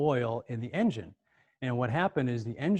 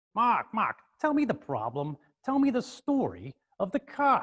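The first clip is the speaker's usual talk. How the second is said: put-on kind of New York accent, high and slow; 9 semitones higher than usual. Retelling a phone call to the guy about his car: New York accent. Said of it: "this kind of New York accent".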